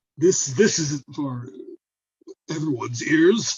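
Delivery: huffy, flustered, blustering tone. Voicing a character answering pilgrims in front of his guards: blustered. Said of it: "He he he gets blustered".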